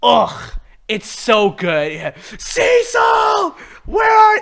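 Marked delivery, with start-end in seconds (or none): 2.4-4.4 very high-pitched, desperate yell. Retelling a scene where a character starts yelling for Cecil: imitating a yell. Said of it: "he starts yelling for Cecil".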